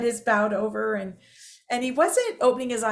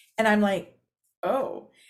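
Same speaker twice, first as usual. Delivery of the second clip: plain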